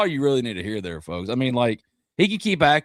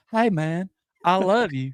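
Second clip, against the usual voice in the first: soft-talker voice, pitched up; 5 semitones higher than usual. Reacting to being imitated, the speaker mimics themselves as a soft talker. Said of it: "a soft talker".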